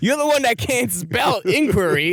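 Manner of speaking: high, slow, exasperated tone.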